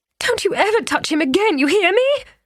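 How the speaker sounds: piercing, shrill, very high falsetto cry. [name] confronts Karsten for slapping his own child: shrill falsetto. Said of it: "[name]'s voice went up to a falsetto".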